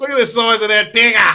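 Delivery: shrill, booming, loud, high Australian accent. Joking with a friend about a misheard word: australian accent. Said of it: "but Australian like crikey".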